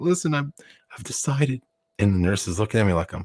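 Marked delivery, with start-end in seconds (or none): 0.0-1.6 fake tearful crying voice, higher and quieter. Retelling a hospital prank to a nurse, imitating himself fake crying. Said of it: "I'm starting to cry".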